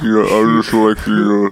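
lowest-pitched, very deep voice. Answering friends who marvel at how low he speaks, extremely low voice. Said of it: "it sounds like he's just opening his mouth".

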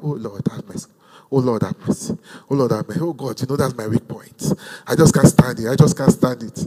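put-on pleading, low and soft. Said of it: "Then after, they will now calm down".

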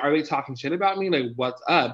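plain

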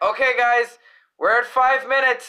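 high-pitched, loud call-out. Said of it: "the producer came in and was like".

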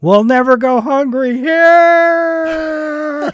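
very shrill, very loud, high, stretched-out scream. Retelling a legend of a man jumping off a train: imitating someone screaming.

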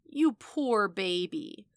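slow drawl with stretched, drawn-out vowels. Vanessa answers after the screaming ends in gunshots, drawling. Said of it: "Vanessa drawled".

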